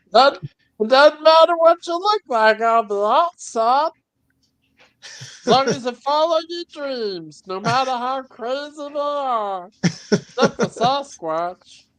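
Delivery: high cartoon character voice. Asked by another speaker to do his Meatwad: Meatwad voice. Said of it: "he did his Meatwad".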